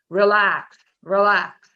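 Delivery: loud, commanding, booming voice. Recalling a voice heard while dying in the water: booming voice. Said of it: "this relaxing or this booming".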